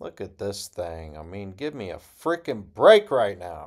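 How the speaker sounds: booming, very loud, excited outburst, rising in pitch. Looking at a house with a high degree of architectural integrity: excited. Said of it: "I didn't mean to get excited".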